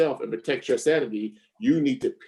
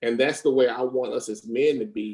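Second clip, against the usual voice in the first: ordinary delivery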